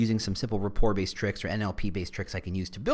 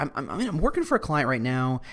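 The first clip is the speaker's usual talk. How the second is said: ordinary delivery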